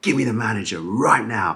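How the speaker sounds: put-on mild demanding yell. Retelling a restaurant complaint, imitating dad shouting at the waiter.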